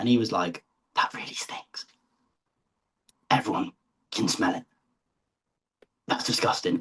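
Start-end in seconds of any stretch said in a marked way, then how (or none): 0.9-6.8 hushed, breathy whisper close to the ear. Retelling what someone whispered in their ear after a fart: imitating a whisper. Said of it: "he started whispering in my ear".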